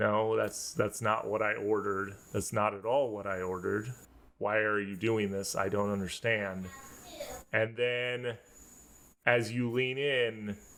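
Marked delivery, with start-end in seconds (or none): 0.0-6.7 man's voice running on, rushed and rattled off. Narrating for players leaning in to listen, in a very quiet man's voice. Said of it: "You hear a man's voice saying very quietly".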